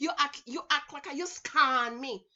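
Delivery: put-on Jamaican man's accent. Retelling what men back home used to say: imitating jamaican guys. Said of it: "That's what the Jamaican guys used to say".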